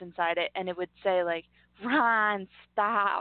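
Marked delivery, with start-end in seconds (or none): 1.8-3.2 put-on New Jersey accent like a talking doll. Quoting a talking doll of a cast member's ex, in a New Jersey accent. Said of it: "in her Jersey accent".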